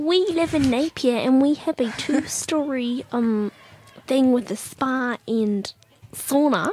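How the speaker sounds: imitated woman's voice. Retelling a text from a lady wanting a house swap: imitating a lady's voice. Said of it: "I love how you gave her a voice".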